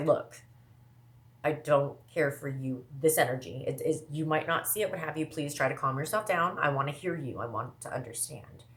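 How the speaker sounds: plain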